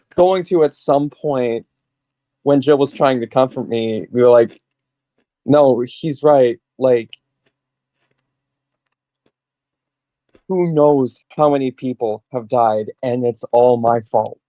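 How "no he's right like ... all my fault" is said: acted hopeless, broken, despairing tone. Voicing a broken character whose friend tries to comfort him: broken, despairing in-character line. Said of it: "Are you saying that in character?".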